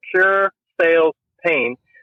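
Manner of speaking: slow, measured, deliberate, unhurried delivery. Repeating the key phrase of a five-second commercial: said slowly. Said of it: "I had to say that slowly".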